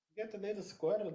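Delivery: put-on Portuguese accent. Retelling what she says to Lucinda, in a Portuguese accent. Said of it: "She does it in like the Portuguese accent".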